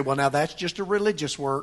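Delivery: ordinary talk, nothing marked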